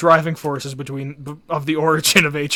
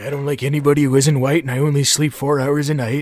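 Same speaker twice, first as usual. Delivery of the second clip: mock elderly politician voice. Imitating a president's remarks, doing a Reagan impression. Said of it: "bust out the Reagan impression".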